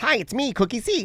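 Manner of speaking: very high pitch, slow and drawn out. Imitating a YouTuber's greeting: Cookie Swirl C impression. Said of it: "She goes".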